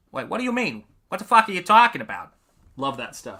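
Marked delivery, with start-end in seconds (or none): 0.3-2.3 put-on pitched-up Boston accent. Recalling a favorite movie line: Boston accent. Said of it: "my Bostonian accent?".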